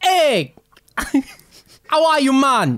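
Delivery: very high, swooping, fake put-on Jamaican patois. Retelling a visit by imitating someone greeting them: put-on Jamaican patois. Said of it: "he was doing full Jamaican patois".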